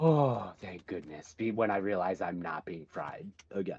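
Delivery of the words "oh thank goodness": big sigh, relieved. Playing a character realizing they are not being shocked again: big relieved sigh. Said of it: "I give this big sigh of".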